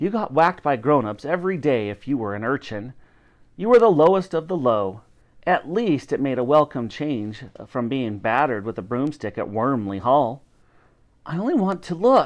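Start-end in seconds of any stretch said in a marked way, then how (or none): 11.2-12.3 high, begging, wheedling pleading voice. Elsie, an urchin, to the paper seller who is shooing her away, pleading. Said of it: "pleaded Elsie".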